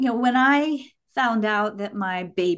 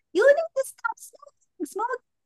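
put-on yelling in a tiny baby voice, much higher. Retelling what a passenger yelled out the car's back window, in a little baby voice. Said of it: "yell out in this little baby voice".

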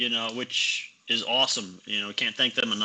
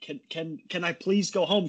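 put-on pleading tone, higher; 6 semitones higher than usual. Retelling how people on the boat beg to go home: imitating someone begging. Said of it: "people on my boat just begging me".

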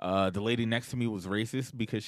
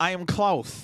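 one-note, catchphrase-style delivery; 9 semitones higher, 6 dB louder than usual. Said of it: "why is he talking like Groot?".

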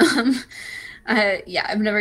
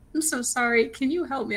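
acted pleading, on the verge of tears; 4 semitones higher than usual. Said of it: "almost in tears".

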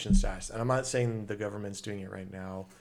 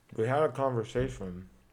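talking with mouth full of food; 2 semitones higher than usual. Starting to mention a conversation while eating a Pop-Tart: talking with mouth full. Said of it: "I got s'more Pop-Tart in my mouth".

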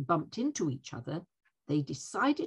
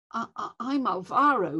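stuttering stammer, higher pitch and louder; 6 semitones higher, 5 dB louder than usual. Alvaro introduces himself to the others, stuttering. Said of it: "he said while stuttering".

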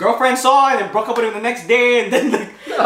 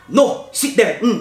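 very slow, deliberate, drawn-out delivery. Retelling how a gym teacher refused a bathroom request: imitating a filipino teacher. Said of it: "fun Filipino lady".

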